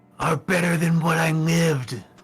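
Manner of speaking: furious screaming at the top of his lungs. Voicing Zesh yelling at the hags: screaming at the top of his lungs. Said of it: "at the top of his lungs screaming".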